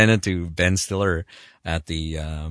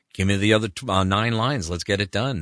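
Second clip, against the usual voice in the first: usual speaking voice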